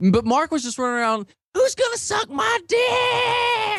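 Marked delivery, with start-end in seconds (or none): 1.5-3.8 put-on very high, very slow yell, "dick" stretched. Retelling a friend running around a dance club: imitating someone screaming. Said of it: "Just screaming".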